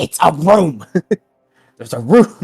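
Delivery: drawn-out, mild shout that never quite lands. A character calls out to the group about a room, trying to shout. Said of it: "just trying to shout it".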